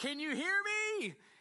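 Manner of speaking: put-on, loud, very high-pitched shouting. Describing older people talking into their phones, imitating someone shouting. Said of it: "They would shout".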